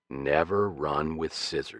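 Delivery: grave, solemn voice. A man bends down to answer a young girl's question, in a very serious voice. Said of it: "said in a very serious voice".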